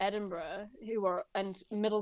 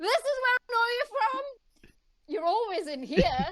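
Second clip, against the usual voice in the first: shrill, loud, very high-pitched shout; 6 dB louder than usual. Retelling pointing at a friend in a restaurant: retelling a shout. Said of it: "I just pointed at him and I shouted".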